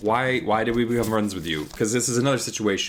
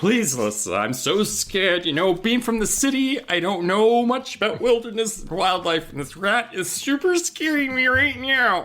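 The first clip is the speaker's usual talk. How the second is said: play-acted, over-the-top fear, very high and slow; 12 semitones higher than usual. Retelling a friend's call for help, imitating exaggerated fake fear. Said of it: "going all in on it".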